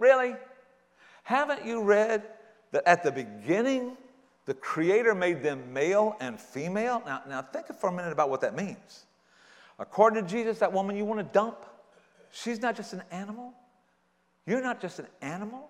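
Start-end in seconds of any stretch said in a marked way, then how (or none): 0.0-7.0 put-on, slow, pointed, dry sarcastic tone. Acting out Jesus answering the Pharisees: imitating a sarcastic tone. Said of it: "this is sarcasm right here".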